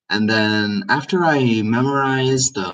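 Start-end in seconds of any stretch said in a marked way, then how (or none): none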